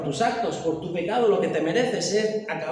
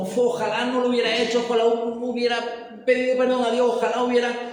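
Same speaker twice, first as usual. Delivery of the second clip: put-on high, weepy crying voice; 5 semitones higher than usual. Describing a person in a place of suffering, imitating someone crying. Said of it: "Y está llorando como".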